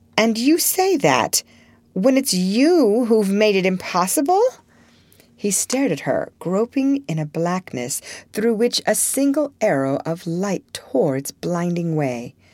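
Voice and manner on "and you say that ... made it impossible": genuinely astonished and incredulous. A woman answers a man who says she's the one he'd have married, in unfeigned astonishment. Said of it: "She looked at him with unfeigned astonishment".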